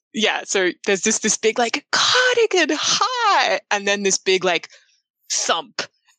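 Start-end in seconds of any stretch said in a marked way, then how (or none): 2.0-3.6 mock, very high, loud excited yell, "hi" stretched. Narrating a greeting from someone who recognizes you, said very loudly. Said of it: "they say it so loudly".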